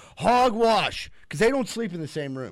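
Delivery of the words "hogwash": sudden, high, loud screaming. Retelling how Davis screams from the couch: imitating Davis screaming. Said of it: "he'll start screaming from the couch".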